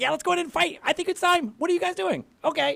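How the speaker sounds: very high, eager, keyed-up excitable character voice. Describing her character to the group, then voicing her in an excitable, very high voice. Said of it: "excitable and very high".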